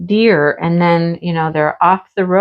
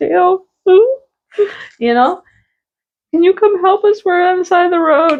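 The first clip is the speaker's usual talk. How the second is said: very high, tearful, crying pleading voice; 12 semitones higher than usual. Retelling a phone call asking someone for help, retelling a tearful plea. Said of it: "I was like in tears".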